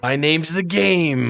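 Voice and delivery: slow, drawn-out wrestler-style delivery, every word stretched. Recalling The Rock copying Triple H: Triple H impression.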